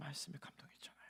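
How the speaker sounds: dramatic, soft, hushed whisper.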